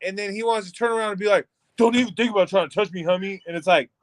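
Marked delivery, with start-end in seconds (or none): 1.8-3.4 sudden, bass-heavy, deep tough-guy voice. Retelling how a scared guy turns around afterward: imitating a guy suddenly using a deep voice. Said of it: "where'd all that bass just come from".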